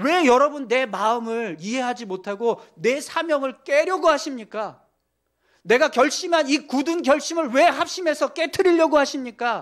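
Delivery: sharp, rebuking voice.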